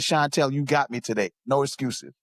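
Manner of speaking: ordinary delivery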